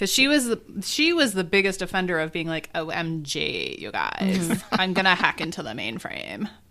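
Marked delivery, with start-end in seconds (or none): 2.7-6.5 exaggerated Valley Girl accent, lower pitch. Imitating a woman with a valley girl hacker persona, in an extreme valley girl accent. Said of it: "she did this extreme Valley Girl accent".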